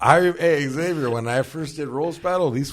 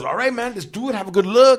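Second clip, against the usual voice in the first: very high-pitched, loud, positive, encouraging tone; 9 semitones higher, 7 dB louder than usual. Retelling how a comedian asked about his jokes: Jesus Trejo impression. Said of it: "the best Jesus Trejo impression".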